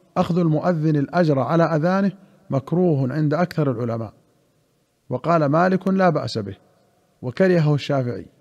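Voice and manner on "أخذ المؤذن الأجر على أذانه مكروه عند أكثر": plain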